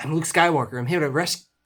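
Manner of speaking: fast, high, heroic announcement style. Quoting a movie line about a rescue, as fast as Mark Hamill. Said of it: "hard to talk as fast as Mark Hamill".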